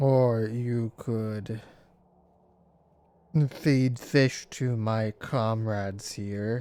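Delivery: vast, deep, echoing ancient whale creature voice. A giant whale bargains with travellers wanting passage, deep, echoey voice. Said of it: "but a giant whale, / You hear in a deep, echoey voice. / You hear in a deep, echoey voice".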